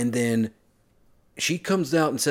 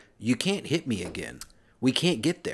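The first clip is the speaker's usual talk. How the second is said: normal talking voice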